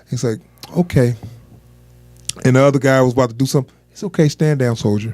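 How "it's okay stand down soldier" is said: perfectly calm, cool, easy, unruffled voice. Retelling a story about a guy who pulled a gun, quoting someone, imitating a calm voice. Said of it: "He's so calm and shit".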